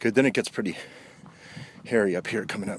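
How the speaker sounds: breathless, winded, out-of-breath talk. Speaker not in fantastic shape at the moment, sounding winded. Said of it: "Excuse me sounding so winded".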